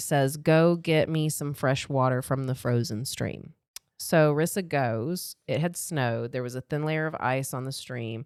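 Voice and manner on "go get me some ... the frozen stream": normal talking voice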